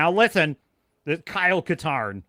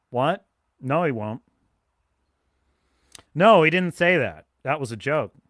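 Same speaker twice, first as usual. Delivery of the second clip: deadpan, unanimated, dead-flat dry monotone. Imitating a streamer answering his chat: Asmongold dry monotone. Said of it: "in his very dry monotone".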